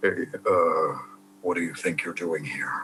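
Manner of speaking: put-on low, hushed character voice. Speaker shows the lower voices they can do, lower put-on voice. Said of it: "I do lower voices where it's like".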